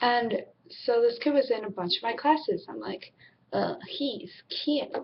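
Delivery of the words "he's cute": younger voice like a seventh-grader. Retelling a crush on a classmate: imitating own seventh grade voice. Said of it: "that's my seventh grade voice".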